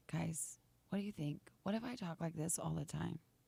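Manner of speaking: very soft, hushed, rough, creaky, seductive voice. Speaker asks viewers a question, in a sexy voice. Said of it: "that's my sexy voice".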